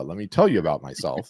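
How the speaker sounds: normal talking voice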